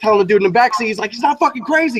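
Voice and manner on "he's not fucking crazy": put-on all-out, high-pitched screaming outburst. Retelling a friend screaming to the backseat: imitating a friend screaming. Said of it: "he's screaming".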